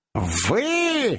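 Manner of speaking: scornful, dismissive, drawn-out, contemptuous cry. An old man answers Mr Pickwick's remark: contemptuous exclamation. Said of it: "презрительно воскликнул старик".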